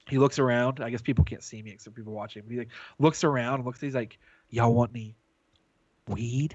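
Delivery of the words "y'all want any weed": slow, sketchy, odd, shady delivery. Retelling how a guy offered weed: imitating a shady guy offering weed. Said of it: "the most shady, odd".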